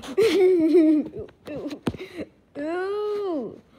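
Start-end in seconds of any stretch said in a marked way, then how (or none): 0.2-1.3 hard, loud outburst of laughter. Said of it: "I'm laughing so hard right now".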